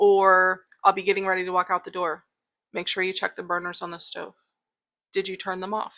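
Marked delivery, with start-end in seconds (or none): 2.7-6.0 imitated calm voice. Describing a voice heard while getting ready to leave, imitating a calm voice. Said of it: "it's a very calm voice".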